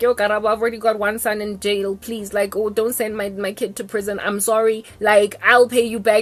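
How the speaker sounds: ordinary delivery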